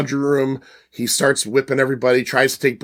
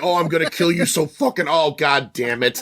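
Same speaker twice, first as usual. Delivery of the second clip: put-on frustrated monster voice; 3 semitones higher than usual. Retelling a movie scene, voicing a monster failing its attack: imitating a frustrated monster. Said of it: "He's like".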